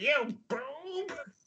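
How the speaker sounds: full cartoon villain voice, pitched very high. Retelling being made to play Skeletor in a game, Skeletor voice. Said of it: "she makes me be Skeletor".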